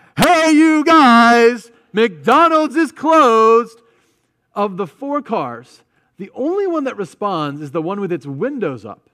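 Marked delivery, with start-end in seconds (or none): 0.2-3.8 full, very loud high scream, drawn out. Retelling calling out to cars a third time: re-enacting screaming, youth pastor voice. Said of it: "I'm just screaming".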